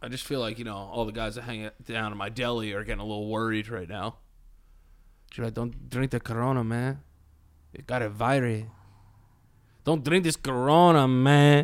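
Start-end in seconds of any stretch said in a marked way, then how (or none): 5.3-11.6 slow, drawn-out put-on Mexican accent. Imitating the guys who hang out at the deli: Mexican accent. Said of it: "I heard you doing like a Mexican accent".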